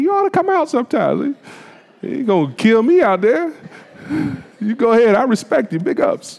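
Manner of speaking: put-on a touch of Southern accent. Imitating his sister's daughter, who runs marathons: imitating a little Southern accent. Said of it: "little Southern accent".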